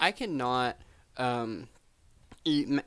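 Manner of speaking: voice breaks and cracks, very slow and drawn out. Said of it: "I don't know what happened to my voice there. Voice crack".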